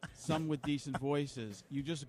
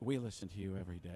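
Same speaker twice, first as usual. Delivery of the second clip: golf broadcast announcer voice; 7 semitones lower, 4 dB quieter than usual. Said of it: "you gotta kinda do golf, Nantz".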